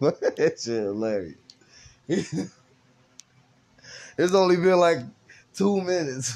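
helpless laughter swamping the words. Speaking on a podcast two minutes in, laughing uncontrollably. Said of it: "I can't stop laughing".

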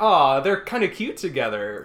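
ordinary talk

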